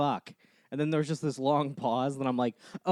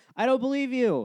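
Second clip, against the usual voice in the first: reenacted distant shout, much higher; 10 semitones higher than usual. Recounting how a passing woman yelled at him from a distance, retelling a yell from afar. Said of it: "like yelling, like from the distance".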